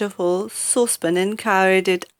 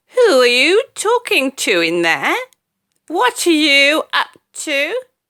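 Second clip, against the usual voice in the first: put-on loud, shrill, screeching old woman's voice; 7 semitones higher, 5 dB louder than usual. Narrator reads Grandma calling to George from the next room, in a screechy voice. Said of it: "came the screechy voice".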